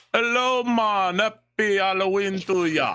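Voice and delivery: put-on Jamaican accent, loud and high. Prank caller greets the person on the phone in a put-on Jamaican accent.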